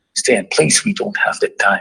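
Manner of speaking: mock crying, tearful, begging, pleading voice. Retelling a caller's urgent warning to leave: retelling a crying plea. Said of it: "she is crying, begging".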